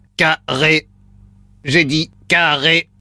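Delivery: low, flat, monotone robot voice. A robot says a word for the caller to repeat back, robot voice. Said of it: "Voix de robot enclenchée".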